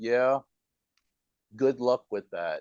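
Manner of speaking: mock sarcastic tone. Retelling someone's reply about the speaker being in Thailand, mimicking a sarcastic tone. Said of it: "kind of a sarcastic tone".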